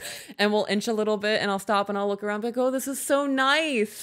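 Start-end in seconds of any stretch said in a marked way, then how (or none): 2.6-4.0 high, slow tearful voice. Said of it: "through my tears".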